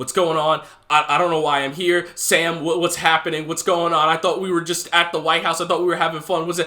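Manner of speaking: put-on panicked, frantic, confused stammering babble. Retelling a movie scene where a character snaps out of mind control: imitating someone freaking out. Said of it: "he starts freaking out".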